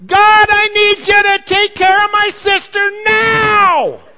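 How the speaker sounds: shrill, very loud, high, slow yelling. Retelling how a little girl prayed above her sister's screams: re-enacting a yelled prayer. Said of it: "So she's yelling".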